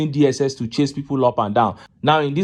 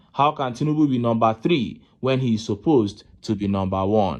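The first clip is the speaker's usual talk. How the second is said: ordinary talk, nothing marked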